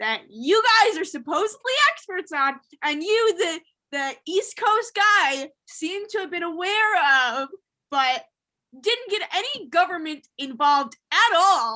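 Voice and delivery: mad tone. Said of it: "I'm coming here as an angry party".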